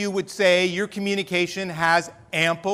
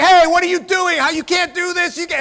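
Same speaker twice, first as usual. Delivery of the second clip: mock yelling, very high-pitched and loud; 10 semitones higher, 6 dB louder than usual. Retelling telling people off outside the house: retelling own yelling. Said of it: "I'm out there and I'm yelling at people".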